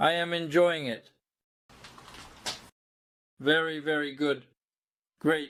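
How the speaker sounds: speaking with a mouth full of food. Tasting food and inviting the listener to try it, talking with mouth full. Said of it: "I still have my mouth full".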